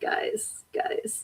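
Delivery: quiet whispered voice.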